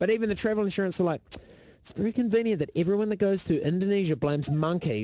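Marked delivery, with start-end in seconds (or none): none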